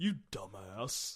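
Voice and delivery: put-on low, dumb-sounding cartoon teen voice. Retelling what someone often calls the speaker, in a Butt-Head voice. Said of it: "in the butthead voice".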